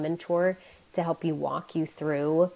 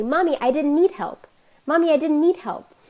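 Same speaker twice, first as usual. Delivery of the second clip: put-on very high, loud, proud, surprised little kid voice; 11 semitones higher, 7 dB louder than usual. Retelling what her child says after succeeding alone: imitating a proud, surprised child. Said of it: "with this proud, surprised look on her face and say".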